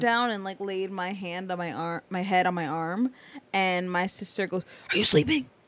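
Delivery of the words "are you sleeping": urgent yell delivered as a stage whisper. Retelling what a sister said during a movie: imitating a whisper-yell. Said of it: "whisper yelling at me".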